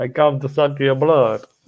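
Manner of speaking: vampire impression voice. Joking with another speaker who just sounded like a vampire, doing a vampire voice. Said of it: "a vampire".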